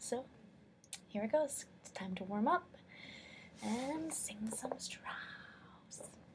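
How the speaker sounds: hushed, quiet voice. Making a video backstage without anyone knowing: speaking quietly. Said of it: "I'm trying to be quiet".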